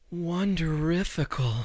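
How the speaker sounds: soft, breathy single word breathed out. Quoting how Ariel also said the word: Ariel's breathy wonderifical. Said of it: "she also said it like this. ... It was very, very breathy".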